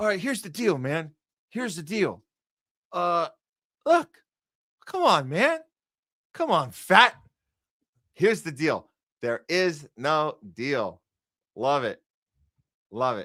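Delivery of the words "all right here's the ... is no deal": speechifying politician voice, pitch swinging all over. Recalling a line the president used to say: Joe Biden impression. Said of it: "Biden used to be like".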